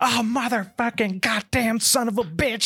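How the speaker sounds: shrill, very high, panicked, freaked-out screaming. Describing a scene where the partner runs in freaking out, imitating Jackson screaming. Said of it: "He's just screaming, freaking out".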